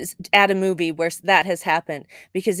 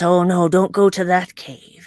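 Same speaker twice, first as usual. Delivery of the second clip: put-on salty old sailor voice and accent; 2 semitones lower than usual. Imitating a show's bartender telling legends and secrets: salty old sea dog voice. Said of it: "a salty old sea dog telling legends and secrets".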